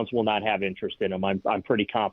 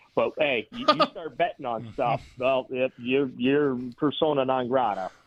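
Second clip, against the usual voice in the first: sarcasm piled on really thick; 3 semitones higher than usual. Commenting on gambling suspensions in sports, heavy sarcasm. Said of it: "I'm laying the sarcasm on really, really thick".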